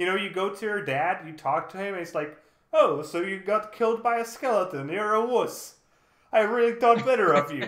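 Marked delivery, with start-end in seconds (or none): 2.7-7.7 loud, high, play-acted scornful, belittling mocking tone. Describing what the player's dad says after you die in a game, imitating a mocking dad. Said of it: "he's like mocking you".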